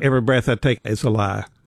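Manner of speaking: ordinary talk, nothing marked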